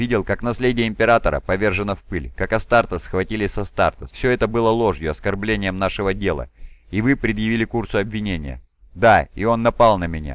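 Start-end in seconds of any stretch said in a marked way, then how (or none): none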